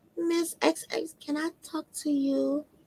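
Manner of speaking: soft, smooth, very slow, hushed small voice. Retelling a girl going to her school counselor, the speaker imitates her quiet, smooth little voice. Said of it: "she got that kind of smooth voice, that kind of quiet, you know, little voice".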